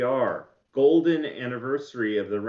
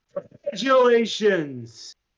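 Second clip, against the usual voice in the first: resounding booming voice, pitched up; 9 semitones higher, 5 dB louder than usual. Game master voices a call from behind the player taking the coin: booming voice. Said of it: "there is a booming voice from behind you".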